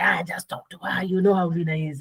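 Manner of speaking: coaxing, easygoing, egging-on friendly buddy tone. Retelling how a friend egged them on: imitating Miles. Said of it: "I can literally hear it in his voice too".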